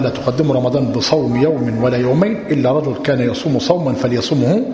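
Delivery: normal talking voice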